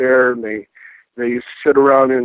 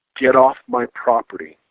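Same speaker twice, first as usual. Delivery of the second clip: put-on breathy, gasping voice. Retelling what a woman's voice said on a recording: imitating a gaspy voice. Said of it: "she says in a gaspy voice".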